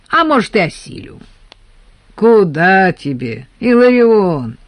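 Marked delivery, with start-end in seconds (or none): 2.1-4.5 lofty, patronizing, condescending, drawn-out Куда. A man answers another man's boast about his strength: condescending. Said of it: "Снисходительно заметил Федор".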